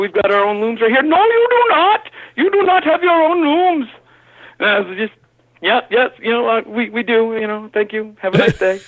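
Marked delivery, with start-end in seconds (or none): 1.0-3.9 very high-pitched put-on Pakistani accent. Retelling a phone call from Pakistan, voicing the caller: imitating a Pakistani caller's accent. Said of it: "me doing an imitation of a phone call of Pakistan calling".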